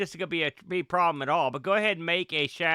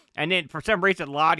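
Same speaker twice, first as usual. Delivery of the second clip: normal talking voice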